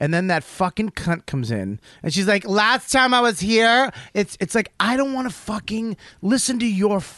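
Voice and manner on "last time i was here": brash, room-filling, loud, drawn-out chatter. Mocking a loud woman arriving at a restaurant: imitating a loud woman. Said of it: "there's that voice".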